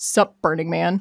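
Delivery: put-on scornful put-down manner. Retelling a greeting from people who looked the speaker up and down, mock-derogatory tone. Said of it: "in the most derogatory way possible".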